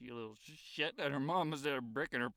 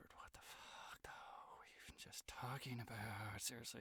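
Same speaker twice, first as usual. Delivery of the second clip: hushed, barely voiced, leaned-in whisper; 3 semitones lower, 13 dB quieter than usual. Retelling leaning in to a street performer after tipping him: retelling a whisper. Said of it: "and I whispered".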